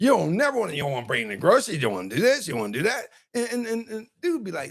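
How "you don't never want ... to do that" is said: bossy, naggy, scolding complaining tone. Acting out a woman scolding a man: imitating a nagging wife. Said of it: "you sound like a mom or a nagging wife".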